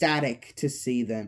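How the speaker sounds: ordinary delivery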